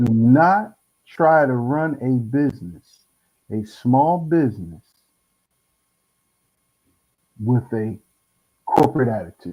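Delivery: slow, deliberate, each word laid out. Repeating a point a second time for emphasis, said slowly. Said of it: "I'm gonna say it again slowly".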